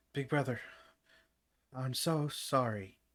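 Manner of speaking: panting, out of breath. Reading a story where a character arrives apologizing: panting, out of breath. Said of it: "he pants, gasping for breath".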